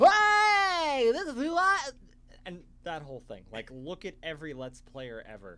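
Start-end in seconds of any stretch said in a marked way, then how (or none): 0.0-1.9 over-the-top cartoon voice, very high, shrill and loud. Speaker mocks how YouTubers exaggerate their personality, in a Simpsons character voice. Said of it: "You just sound like a Simpson character".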